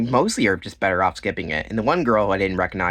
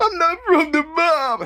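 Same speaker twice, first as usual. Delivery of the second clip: very high, slow, drawn-out mocking impression. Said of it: "She said that in the interview".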